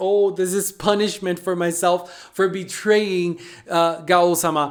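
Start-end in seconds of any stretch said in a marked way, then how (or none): none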